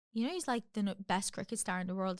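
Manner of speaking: ordinary delivery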